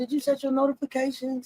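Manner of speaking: sweet, worried, overly concerned tone, laid on thick. Repeating what another speaker just asked: imitating a concerned tone. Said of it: "You gonna say that like you were so concerned?".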